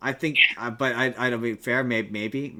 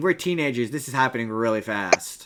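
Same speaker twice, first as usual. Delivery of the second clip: normal talking voice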